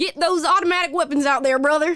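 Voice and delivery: loud, high, laid-on put-on Southern drawl. Imitating a gun-rights advocate's view: Southern accent. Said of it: "I don't know that he has a Southern accent".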